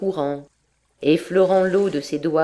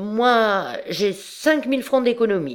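put-on drunken stammer, higher pitch; 5 semitones higher than usual. A drunk man answers a woman who says she has nothing, drunken stammer. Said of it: "Il balbutia, car il était ivre comme Silène".

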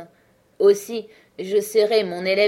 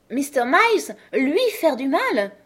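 fiery, sudden heated outburst, high and swooping; 6 semitones higher than usual. Reading a woman's line as she suddenly flares up: flaring up suddenly. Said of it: "elle s'enflamma subitement".

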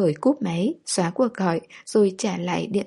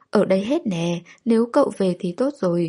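plain reading voice

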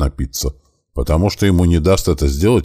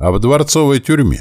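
maliciously gleeful, gloating, pitched-up voice; 9 semitones higher than usual. The baron answers Fosco's question, gloating. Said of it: "злорадно улыбаясь".

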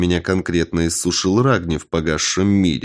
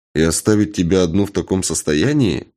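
plain reading voice

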